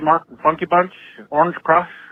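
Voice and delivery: normal talking voice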